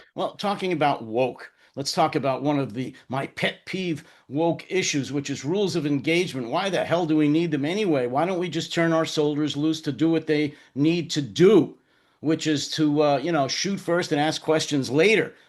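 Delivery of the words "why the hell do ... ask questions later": ordinary talk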